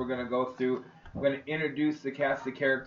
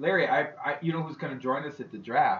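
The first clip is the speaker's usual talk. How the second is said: usual speaking voice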